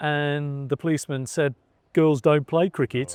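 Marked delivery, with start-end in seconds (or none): 1.9-3.1 put-on Wolverhampton accent. Retelling what a policeman told her mum, in a Wolverhampton accent. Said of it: "That's my best Wolverhampton accent I can do".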